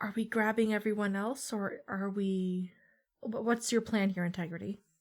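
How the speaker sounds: in a whisper. Down the hall away from the guard, she asks Integrity, whispering. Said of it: "she's going to whisper to her".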